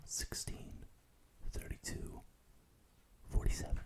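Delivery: whispering. Doing a hearing test, saying numbers into the listener's ear: whispering. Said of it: "I'm just gonna whisper some numbers in your ear".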